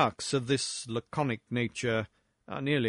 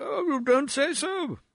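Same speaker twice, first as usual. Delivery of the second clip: flustered gasp, pitched very high; 13 semitones higher than usual. Narrator reading a discomfited man's reply at length, gasping. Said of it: "gasped he at length".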